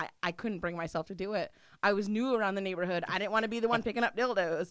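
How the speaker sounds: normal talking voice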